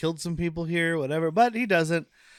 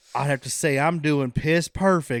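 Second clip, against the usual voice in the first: put-on slow Southern drawl; 2 semitones lower, 3 dB louder than usual. Retelling a movie scene line by line: Southern accent. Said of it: "he does, like, a Southern accent".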